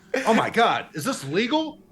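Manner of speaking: high, confused, baffled villain voice.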